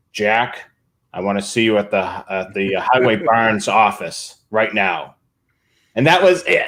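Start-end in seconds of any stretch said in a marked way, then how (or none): 0.1-5.1 mock, very stern, bossy voice. Retelling a radio call, the head of the highway department speaks to Jack, imitating a very stern voice. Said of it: "He had this very stern voice".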